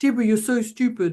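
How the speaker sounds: put-on belittling, self-critical inner voice. Giving an example of negative self-talk: put-on negative inner voice. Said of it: "I like the way I put my voice on then".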